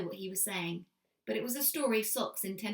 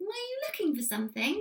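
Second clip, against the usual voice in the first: very high, small squeak; 9 semitones higher than usual. Reading a story aloud, the narrator voices Socks asking the humans: squeaky Socks voice. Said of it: "he squeaked".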